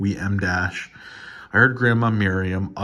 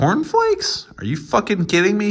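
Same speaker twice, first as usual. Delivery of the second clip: very high-pitched squeak, sing-song and swooping; 13 semitones higher, 3 dB louder than usual. Reading a story aloud, a character's shocked question: high-pitched voice. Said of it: "he asked in a high-pitched voice".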